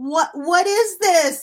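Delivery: loud, high, drawn-out scream. Discussing a book, recalling the reaction to its characters: retelling screaming at people. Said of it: "screaming at the people".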